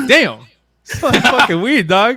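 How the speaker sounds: loud, high-pitched, blurted passing remark.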